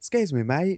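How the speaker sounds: put-on Essex accent. Retelling getting out of a taxi and calling to Phil across the car park; Essex accent. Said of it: "in a classic Essex accent".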